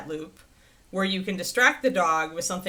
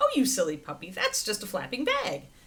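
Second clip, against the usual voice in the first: cheerful relaxed unbothered voice, happy sing-song tone; 2 semitones higher than usual. Demonstrating how to speak to a sensitive puppy, in a happy, unconcerned voice. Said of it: "keep your voice happy".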